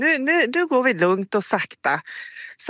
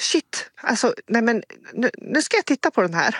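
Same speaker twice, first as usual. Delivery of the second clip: plain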